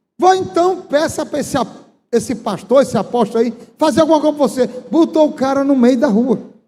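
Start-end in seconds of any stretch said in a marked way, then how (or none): none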